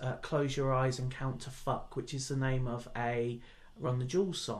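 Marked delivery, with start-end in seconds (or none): none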